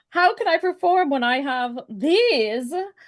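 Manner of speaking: loud, acted sobbing cry, crumpled. Voicing a crumpled figure who has grown extra arms; acted crying. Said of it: "a crumpled over form just like crying".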